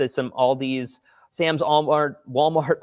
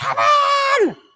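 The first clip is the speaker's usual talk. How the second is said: mock scream, much higher, louder; 5 dB louder than usual. Recounting a moment in a story, imitating mom screaming. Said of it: "She's going".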